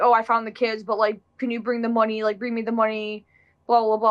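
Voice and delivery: normal talking voice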